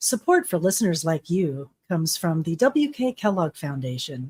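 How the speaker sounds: low public-radio announcer voice. Asked if they have an NPR voice, the speaker recalls an old funder read in NPR announcer voice. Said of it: "do you have an NPR voice?".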